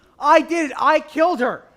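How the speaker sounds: very loud, all-out, full-out screaming yell. Asked to do their loudest line, the performer delivers it: loudest shout. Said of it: "Can you do your loudest line".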